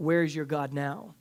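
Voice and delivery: mock, acted-out shout. Telling a story about a man at the gallows, retelling a shout from the crowd. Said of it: "this man from the crowd like shouts out".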